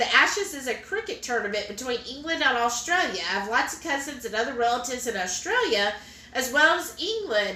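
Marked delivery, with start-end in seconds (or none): none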